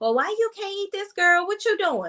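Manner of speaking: high, mocking, nosy busybody voice.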